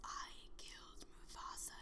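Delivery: villain whisper, hushed and very soft.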